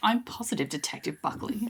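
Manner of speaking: sarcastic, snippy, snarky tone. Retelling a TV scene, quoting Athena's reply: snarky Athena voice. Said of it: "Athena is so snarky in this".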